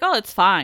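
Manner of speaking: usual speaking voice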